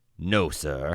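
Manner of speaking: mock respectful tone. Retelling how Harvard answered the administration: mock respectful tone. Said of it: "Harvard said respectfully".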